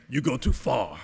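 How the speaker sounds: put-on heavy German accent laid on very thick. Retelling what Mater said when he stood up in the room, in his thick German accent. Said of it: "in his very thick German accent".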